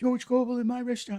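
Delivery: very high, very loud, shrill outcry. Retelling how a restaurant owner reacted to a guest: imitating the owner yelling. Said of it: "she yelled out".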